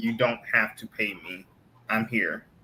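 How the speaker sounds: ordinary talk, nothing marked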